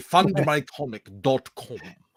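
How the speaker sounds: Viking-style accent. Joking about how a Viking would say a web address, in a Viking accent. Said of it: "how would a Viking say".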